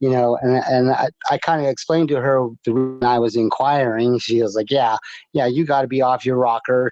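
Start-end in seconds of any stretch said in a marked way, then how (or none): 4.7-6.9 imitated sarcastic woman voice. Retelling what a lady said when asked about it: imitating a sarcastic lady. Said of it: "being kinda sarcastically".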